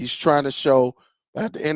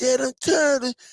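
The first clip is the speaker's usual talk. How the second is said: put-on tiny, very high, squeaky kid voice; 10 semitones higher than usual. A father quoting his son, in a little squeaky voice. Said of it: "He had that one little squeaky voice".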